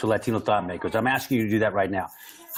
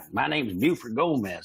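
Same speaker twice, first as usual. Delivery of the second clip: put-on Texas accent, slower; 7 semitones higher than usual. Imitating the right-wing Border Patrol agents met growing up: Buford Gomez Texas accent. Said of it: "and they talk like that".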